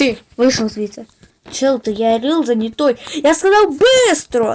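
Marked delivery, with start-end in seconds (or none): 3.2-4.5 angry, higher-pitched shout. Character ordering another to leave quickly, angrily yelling. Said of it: "Чел, не ори на мене".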